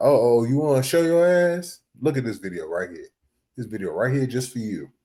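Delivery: fatherly lecturing tone. Retelling what a father would say every time he saw sagging: imitating his father. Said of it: "He'd be like".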